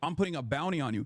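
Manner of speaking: ordinary delivery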